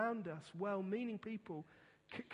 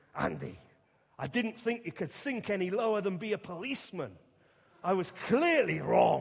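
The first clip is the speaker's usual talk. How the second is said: put-on very loud, swooping Glaswegian accent; 10 dB louder than usual. Speaker quoting his father's reaction to him leaving the police, Glaswegian accent. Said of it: "saying in his Glaswegian accent".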